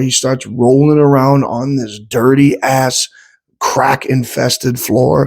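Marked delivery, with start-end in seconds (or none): none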